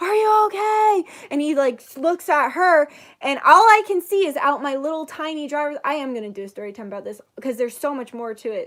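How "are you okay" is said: high, alarmed scream. Retelling how a man pulled up to the speaker's car, imitating a man screaming. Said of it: "he's screaming and he's like".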